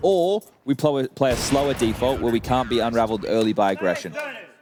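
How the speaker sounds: plain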